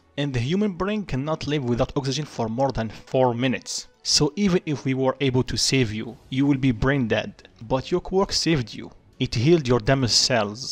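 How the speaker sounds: ordinary delivery, nothing marked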